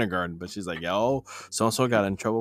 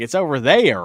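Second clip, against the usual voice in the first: put-on Southern accent, child voice, higher and louder; 3 semitones higher, 6 dB louder than usual. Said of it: "I like the way you do it".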